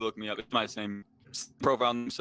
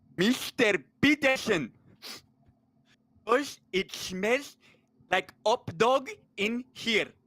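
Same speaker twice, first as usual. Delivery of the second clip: put-on Slovenian accent, very high pitch, very slow; 12 semitones higher than usual. Trying to break the ice in the green room with Jordan Peterson, Zizek impression. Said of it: "this is my uh, impression of Zizek".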